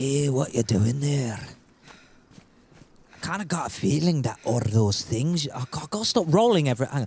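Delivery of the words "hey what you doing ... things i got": put-on Scottish accent, low and menacing. Playing a scottish character threatening strangers met in the game: put-on scottish accent, threatening. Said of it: "I'll be Scottish and I'm gonna threaten everyone".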